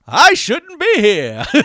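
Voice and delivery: very high, very loud, booming, drawn-out announcer voice. Joking about a cartoon parody, voicing its narrator: imitating the voiceover guy. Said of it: "the voiceover guy's like".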